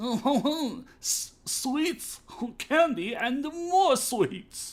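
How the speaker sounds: exaggerated fake French accent, very drawn out and slow. Recounting a friend's impression, the speaker demonstrates it: offensive fake french accent. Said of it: "this is my offensive French accent".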